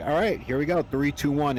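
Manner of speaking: ordinary talk, nothing marked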